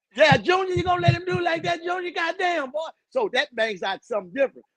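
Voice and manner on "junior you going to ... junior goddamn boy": put-on yelling, higher pitch. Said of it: "they gonna yell it from the stands".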